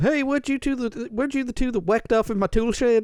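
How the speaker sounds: mock roving country accent. Retelling how a man who lived in Texas greeted two guys, in a put-on country accent. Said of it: "country kind of accent".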